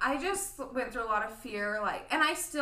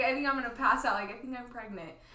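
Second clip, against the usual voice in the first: plain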